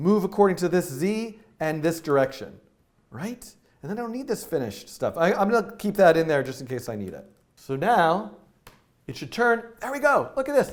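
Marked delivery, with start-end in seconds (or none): 9.8-10.7 very high, excited outcry. Speaker narrating an on-screen demonstration as it turns, excited exclamation. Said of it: "(exclaims excitedly)".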